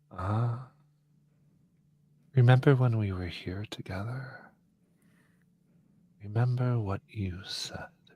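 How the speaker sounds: very soft, hushed, close purring voice. Game master voices someone speaking into Nayland's ear, a very soft purring voice. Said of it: "a very soft voice purring in your ear".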